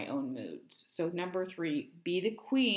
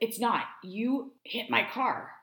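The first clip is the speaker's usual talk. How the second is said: slow, deliberate, pitched-up, mock hostile tone; 5 semitones higher than usual. Retelling what a man in the next car said: imitating a hostile man. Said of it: "he seems a little hostile".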